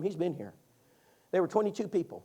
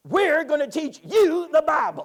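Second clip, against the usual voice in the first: very high, very loud, raspy, drawn-out voice; 11 semitones higher, 10 dB louder than usual. Retelling what a woman at the door said: imitating her raspy voice. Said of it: "That's how she said it".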